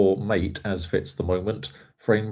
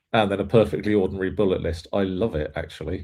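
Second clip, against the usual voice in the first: ordinary talk, nothing marked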